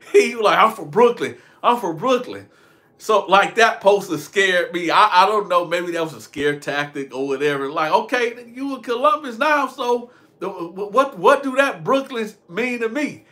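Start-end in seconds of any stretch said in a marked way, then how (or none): none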